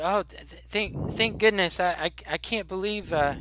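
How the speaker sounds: put-on high, halting, stammering, relieved old woman voice. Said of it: "so she says to you".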